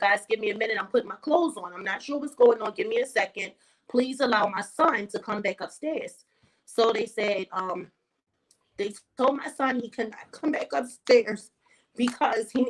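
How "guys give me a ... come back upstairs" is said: usual speaking voice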